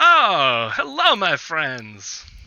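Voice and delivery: loud, slow, high-pitched voice.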